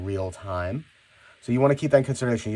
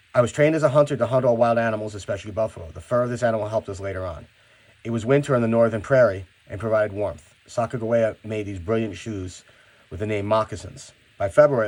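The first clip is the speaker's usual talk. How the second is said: plain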